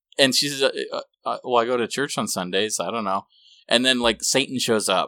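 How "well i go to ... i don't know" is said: put-on flat, disinterested voice, quieter. Retelling an amateur Oz film scene, imitating a disinterested Dorothy. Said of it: "disinterested in everything going on".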